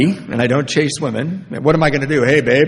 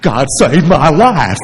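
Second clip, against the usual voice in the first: put-on earnest country voice, louder; 6 dB louder than usual. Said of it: "like Gomer Pyle or something".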